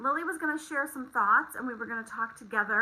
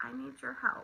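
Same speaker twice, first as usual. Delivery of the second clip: imitated sweet voice, much quieter; 10 dB quieter than usual. Retelling how she came downstairs to do worksheets, imitating her sweet voice. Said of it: "she looks at me with her sweet voice".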